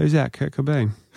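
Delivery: bone-dry, expressionless, dead-level deadpan delivery. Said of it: "more stone-faced than anything I've ever seen".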